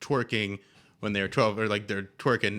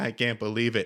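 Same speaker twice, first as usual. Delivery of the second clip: tearful, sobbing, crying voice; 2 semitones higher than usual. Retelling a friend crying on the phone: imitating someone crying. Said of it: "crying, like, just crying".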